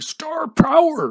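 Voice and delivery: put-on voice, screamed very high, loud and shrill. Hyping Barry Sanders' star power with a shouted Freedom Sufferer imitation. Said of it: "I'm going to have to do my Freedom Sufferer imitation".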